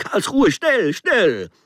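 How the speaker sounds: very high, swooping, urgent shriek. The narrator at the ticket window, minutes before the train, screamed. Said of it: "ich schrie in das Fensterchen".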